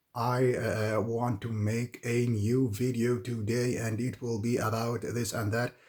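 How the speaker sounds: halting, flat, robotic, word-by-word speech. Demonstrating speech when thinking only of the next word, speaking like a robot. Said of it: "like a robot".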